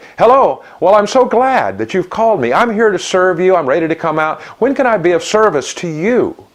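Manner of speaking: cheery, bright, high, really happy voice. Advising a transport company owner how to answer the phone: really happy voice. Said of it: "a really happy voice".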